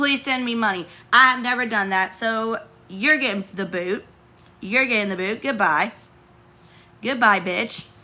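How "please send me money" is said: mock pleading, begging tone. Describing what real begging sounds like: imitating someone begging for money. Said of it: "Literally on your hands and knees saying".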